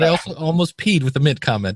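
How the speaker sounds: plain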